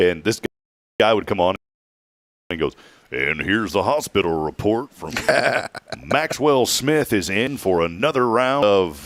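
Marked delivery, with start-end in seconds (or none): 3.1-9.1 put-on radio announcer voice. Retelling a hospital report on the radio: imitating a Cooter Roberson type voice. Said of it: "Very distinct voice, like a Cooter Roberson type voice".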